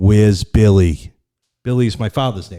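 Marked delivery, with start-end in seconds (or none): 0.0-1.1 low, loud, unnatural, inhuman female voice. Retelling a phone call, imitate the caller's non-human female voice. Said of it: "but it's not human going".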